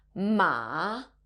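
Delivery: ma in third tone, dipping then rising. Tone lesson warning about mixing up tones, third tone on 'ma'. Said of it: "you end up using the third tone".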